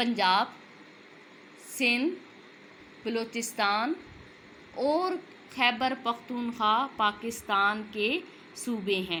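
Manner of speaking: brief, light pause after each listed name. Listing Pakistan's provinces, with a slight pause after each province name. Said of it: "सब में मैंने हल्का सा अपने आप को ठहराव दिया है।".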